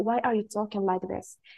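normal talking voice

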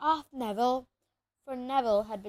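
ordinary delivery

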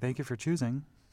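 polite, sweet, much nicer, extra-nice customer service voice. Showing how she answers the phone at work: extra-nice customer service voice. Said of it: "But I say it much nicer".

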